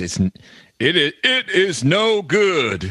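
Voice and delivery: high, very slow statesman voice, stumbling over "in". Answering a question about slavery, joking: Abraham Lincoln impression. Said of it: "a really good Lincoln impersonation".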